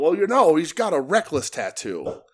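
ringside wrestling announcer commentary voice. Retelling what J R said on commentary during the match: J R impression. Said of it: "that was my J R impression".

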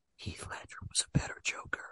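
soft, close-up, leaning-in whisper. Retelling a film scene, acting out a character leaning in to whisper to a bleeding man. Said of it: "Norman leans in and whispers".

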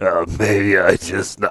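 low, derisive, teasing put-on voice. Teasing the other speaker by imitating how he just talked: mocking imitation of the other speaker. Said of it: "You're like".

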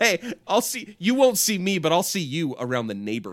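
creepy, menacing neighborly tone. Speaker redelivers an earlier sign-off line, threatening.

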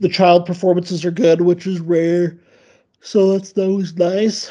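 speaking through a yawn. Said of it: "excuse my yawning".

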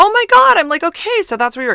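eager, high excitement. Retelling learning where a man works: retelling being all excited. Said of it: "I was like all excited".

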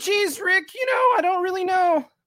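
very high cartoon character voice. Speaker showing the hosts the voices they do, Rick and Morty voice. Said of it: "when you're doing the voices and stuff".

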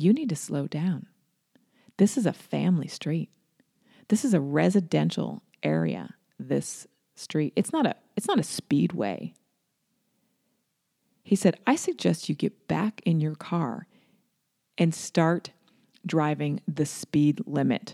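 put-on calm, collected man's voice. Retelling what a driver said after being screamed at, mimicking a calm, collected man. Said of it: "he was so calm and collective".

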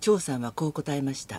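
very low, flat, deadpan monotone, no feeling. Speaker demonstrates a line delivered with no emotion, flat monotone reading. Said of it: "みたいなトーンでずっとやってるわけ".

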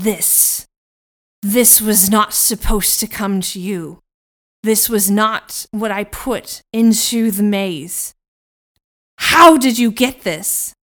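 full of fury. He turns to you after seeing what was on Elizabeth's neck, furious. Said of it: "a new kind of fury glints".

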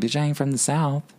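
usual speaking voice

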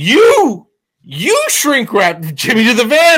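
play-acted upset tone. Retelling how a friend's mom scolded him, imitating an upset mom. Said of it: "she was really upset with me".

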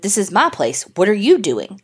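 ordinary delivery

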